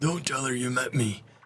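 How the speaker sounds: raspy, hoarse voice. A voiceless tomb colonist draws the crew aside to speak: hoarse rasp. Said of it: "he says in a hoarse rasp".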